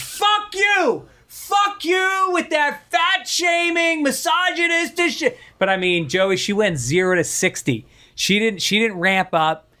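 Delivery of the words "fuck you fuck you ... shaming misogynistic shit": put-on shrill middle-aged woman voice, drawn-out scream. Recalling a middle-aged woman's reaction the second a joke finished, imitating a woman screaming. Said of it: "she was on her feet, screaming".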